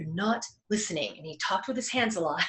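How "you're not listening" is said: a little stern, mildly reproving tone. Retelling how a mentor spoke when not listened to: imitating a stern tone. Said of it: "he kinda got a little stern".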